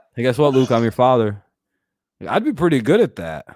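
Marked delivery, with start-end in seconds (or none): none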